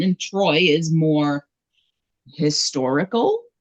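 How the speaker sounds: "historical" set off with audible scare quotes. Complaining that a film leaves out myths: air quotes on "historical". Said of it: "You hear the quotes in my voice".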